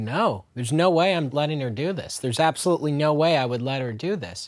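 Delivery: ordinary delivery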